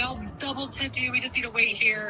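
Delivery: normal talking voice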